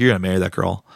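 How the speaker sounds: oddly envious, pointed, jealous tone. Retelling a girl's remark about marrying someone: imitating a weird jealous tone. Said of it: "in a weird jealous tone".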